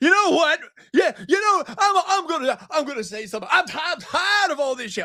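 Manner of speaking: maudlin voice pitched very high.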